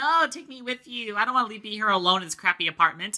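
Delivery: play-acted, high, weepy, pleading crying voice. Summarizing a scene where Iroha leaves for school, imitating Kaguya crying. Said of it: "who is crying like".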